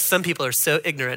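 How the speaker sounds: soft, quiet, dismissive, belittling tone.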